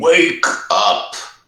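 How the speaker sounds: thunderous, rumbling, loud, booming wizard voice. Player's character magically yelling to wake a sleeping figure, loud booming rumbling voice. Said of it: "loud, booming, rumbling voice".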